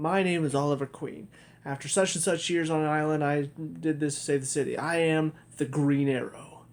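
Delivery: plain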